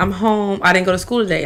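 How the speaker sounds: ordinary delivery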